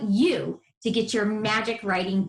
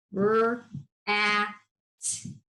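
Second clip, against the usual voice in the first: flat robotic voice, each sound separated one by one. Teaching readers to listen to a word's sounds: robot voice, sounds separated. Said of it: "Say it like a robot".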